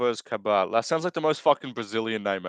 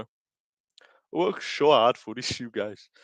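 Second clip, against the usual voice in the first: put-on English spoken with a Brazilian Portuguese accent. Showing off your accent to the listeners, do a Pantoja impression with a Brazilian Portuguese accent. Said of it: "It's my Pantoja impression".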